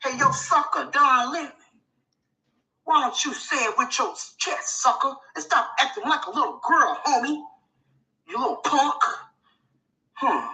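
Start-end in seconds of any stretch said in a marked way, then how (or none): 0.0-9.0 put-on tough gangster talk, quieter. Showing what acting gangster sounds like, after being asked: acting gangster. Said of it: "Now that's acting gangster".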